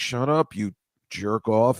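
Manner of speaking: slow, voiced stage half-whisper, taking time. Retelling what a man in a photo was saying: imitating someone half-whispering.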